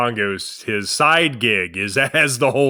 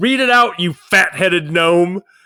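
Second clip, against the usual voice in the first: loud, pitched-up, acted-out holler; 6 semitones higher, 5 dB louder than usual. Retelling a man yelling at someone slow to unfold a newspaper, imitating Jeff yelling. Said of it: "Jeff would yell out".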